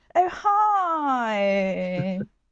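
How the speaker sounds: put-on received pronunciation accent. Imitating a newsroom reporter greeting someone: put-on received pronunciation accent. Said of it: "received pronunciation".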